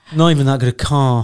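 dull, unexcited, drab, flat delivery. Teasing the other person about how they said they love their car: mimicking a drab voice. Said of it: "said it in such a drab voice".

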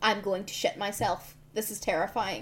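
ordinary talk

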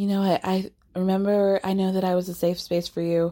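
imitated whispering. Retelling what one person whispered to another: imitating a whisper. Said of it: "Lisa whispers to Meredith".

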